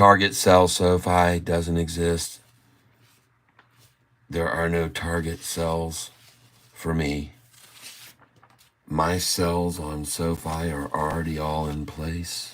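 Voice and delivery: put-on golf commentator cadence. Addressing the audience, the speaker switches into a golf voice. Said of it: "We're using the golf voice now".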